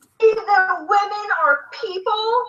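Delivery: very slow, stretched-out, shrill, drawn-out shrieking scream. Retelling how an argument began, imitating someone screaming. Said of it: "just screaming".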